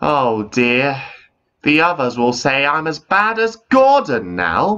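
slow, high, drawn-out groaning. Narrator reads the engine Ivo Hugh after his safety valve bursts, groaning. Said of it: "Ivo Hugh groaned".

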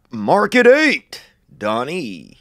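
swooping actor-style delivery, pitch swinging freely. Asked to sound like the actor: Jeff Bridges impression. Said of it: "You could be Jeff Bridges. You think? Let's hear it".

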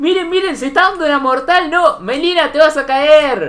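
high-pitched, loud, frightened screaming.

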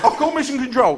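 high, anxious, panicked voice.

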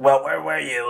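woman's raspy smoker's voice. Retelling what a woman at the job asked him: imitating a smoker's voice. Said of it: "she had, like, a smoker's voice".

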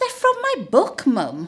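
high, sing-song chiding scolding. Little Maisie answers her mum's question, scolding. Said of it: "Maisie scolded".

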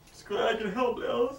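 high, tearful voice near crying. Acted scene, replying to thanks for washing the dishes, talking close to tears. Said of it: "Are you crying?".

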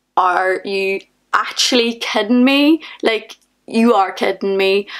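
ordinary talk

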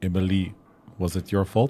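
attempted put-on French accent. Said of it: "I can't remember how to do a French accent".

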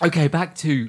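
ordinary talk

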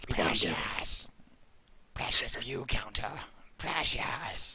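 slow creature voice, every word dragged out. Joking after the co-caster says he sounds like Gollum: Gollum voice. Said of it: "I sound like Gollum".

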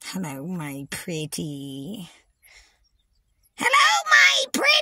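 pitch swinging up and down. Ranting at critics about being called the evil one: Wicked Witch voice. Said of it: "Call me the Wicked Witch".

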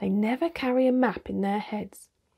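plain

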